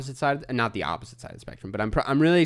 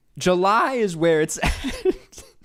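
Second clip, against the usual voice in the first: voice breaking mid-line, cracking and pitched up; 6 semitones higher than usual. Speaker chatting about the summer months, voice cracking. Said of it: "Voice crack".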